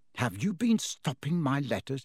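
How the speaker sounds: plain reading voice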